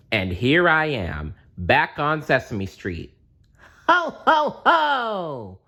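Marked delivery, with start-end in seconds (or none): 3.8-5.4 very high, loud, swooping, drawn-out ho ho ho. Reading a story aloud, a character laughing: loud chuckle like Santa Claus. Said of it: "I chuckle loudly".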